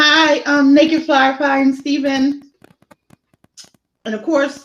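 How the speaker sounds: high voice, talking through a mouthful of food. Greeting two people while still chewing a bite of sandwich: talking while chewing. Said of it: "so I'm still like chewing".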